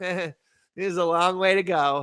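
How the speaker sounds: quiet polite laughing speech. Retelling how a nice guy answers while quietly laughing: imitating quiet polite laughing while talking. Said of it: "quietly laughing, smiling, laughing".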